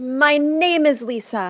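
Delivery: very loud, high, proud, top-of-the-lungs shout. Reenacting a shout at the top of her lungs in a store: imitating own past shout. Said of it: "she did this at the top of her lungs".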